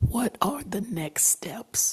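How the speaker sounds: hushed whisper with voice nearly gone. Losing their voice at a commission meeting, asking a fellow commissioner, whispering. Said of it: "so I'm going to whisper because I'm losing it".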